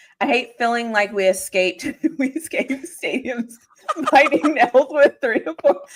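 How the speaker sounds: reading aloud, broken by laughter. Reading a viewer's super chat aloud on a stream, laughing while reading. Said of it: "so I'm sorry for laughing".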